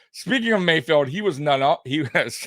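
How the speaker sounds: words broken up by laughter. A host talks about the twenty eighteen draft while laughing while talking. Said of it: "I'm sorry, I'm still laughing".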